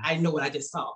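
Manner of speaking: ordinary talk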